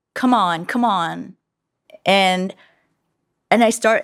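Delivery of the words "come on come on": put-on begging, pleading tone. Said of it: "begging me to tell him what it's about".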